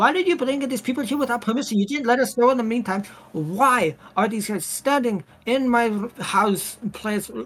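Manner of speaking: furious voice. Roleplay scene, Hikaru's mom finding people in her house, furious mother. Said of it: "She's furious".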